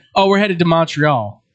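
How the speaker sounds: ordinary talk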